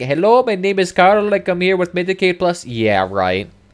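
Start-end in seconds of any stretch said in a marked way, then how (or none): 0.0-2.6 heavy put-on Indian accent, pitched up. Mocking a spam caller who just phoned, in a thick Indian accent. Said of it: "somebody with a thick Indian accent saying".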